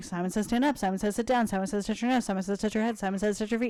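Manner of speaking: extremely fast, rapid-fire, rattled-off delivery. Showing an insane Simon Says game for the kids: speaking as fast as possible. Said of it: "speak as fast as humanly possible".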